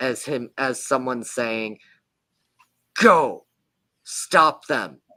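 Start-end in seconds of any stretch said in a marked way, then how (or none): 3.0-4.9 very loud goblin yell with wild pitch swings. A game master voices a goblin yelling from a door beyond: loud deep goblin yell. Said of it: "loud, deep goblin voice yell".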